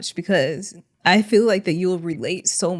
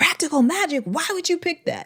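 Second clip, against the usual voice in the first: sudden, very high, shrill acted-out yell; 11 semitones higher than usual. Retelling a street interviewer's reaction to a favorite movie: imitating Billy yelling. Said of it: "And then he just yells".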